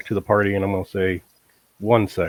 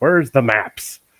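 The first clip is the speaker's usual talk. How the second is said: high, loud hollering; 5 semitones higher, 5 dB louder than usual. Bursting through a shop door in the game, hollering. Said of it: "I'm hollering".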